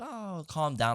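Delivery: placid, easygoing, reassuring tone. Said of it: "like Bob Ross kinda feel".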